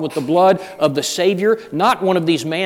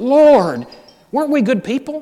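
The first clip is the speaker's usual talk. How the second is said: desperate, high-pitched pleading tone; 8 semitones higher, 3 dB louder than usual. Speaker voices people addressing the Lord on judgment day: acting out desperate pleading. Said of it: "you can hear the desperation in their voice".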